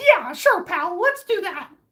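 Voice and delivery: put-on cartoon mouse voice. Doing a Patrick Star impression outside a store, talking to Mickey: Patrick Star voice. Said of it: "my impression of Mickey Mouse".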